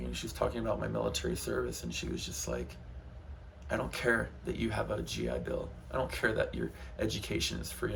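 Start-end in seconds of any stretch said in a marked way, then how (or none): none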